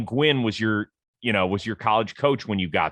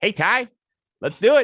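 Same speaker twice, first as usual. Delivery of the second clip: very high, loud, pitched-up calling out; 13 semitones higher, 6 dB louder than usual. Imitating a famous hitter phoning a seventeen-year-old recruit: Tony Gwynn voice. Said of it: "picks up the phone with that voice".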